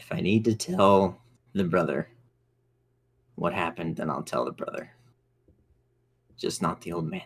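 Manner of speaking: speaking in a whisper. Pausing beside Anya to speak privately about the family: whispering. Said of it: "I'm gonna whisper and I'm gonna say".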